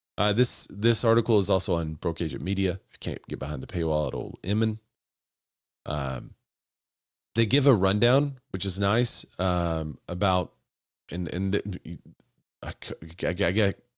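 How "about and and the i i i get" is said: stuttering and stammering over words, much slower. Explaining an article's rundown, the speaker trips over the words, stuttering. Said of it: "I'm stuttering".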